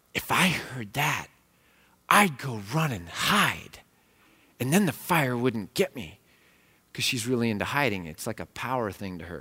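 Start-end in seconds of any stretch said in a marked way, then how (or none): 0.2-6.2 put-on whispering child voice. Retelling what a daughter whispered in an ear: imitating a child whispering. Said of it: "she whispers in my ear".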